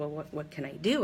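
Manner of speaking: ordinary talk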